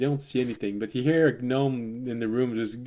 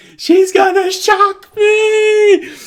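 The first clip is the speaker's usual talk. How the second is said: very high, loud, shrill, terrified scream, "me" held long; 15 dB louder than usual. Narrating a game, the storyteller voices a gnome during an attack: screaming. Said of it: "You hear one screaming".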